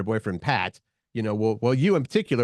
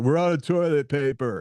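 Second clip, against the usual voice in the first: imitated yell, higher; 4 semitones higher than usual. Retelling calling out from the restroom at home: retelling a yell. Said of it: "I would yell out there".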